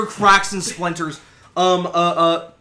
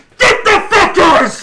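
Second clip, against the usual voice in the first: very high, loud, rallying shout; 12 semitones higher, 9 dB louder than usual. Voicing someone in the crowd as a fight starts: shouting. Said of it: "somebody just shouts".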